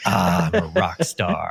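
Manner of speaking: slow, drawn-out, smug rock-star voice.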